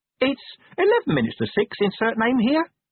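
timid. The imp answers when asked what it has to say, meekly. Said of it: "said the imp meekly".

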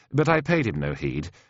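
ordinary delivery

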